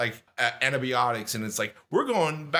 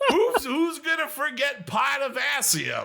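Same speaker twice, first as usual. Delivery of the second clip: Brooklyn accent impression, higher; 9 semitones higher than usual. Retelling a dad's science tutoring lesson: imitating dad, Brooklyn guy accent. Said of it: "when [name] does his Brooklyn guy accent".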